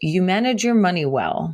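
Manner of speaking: plain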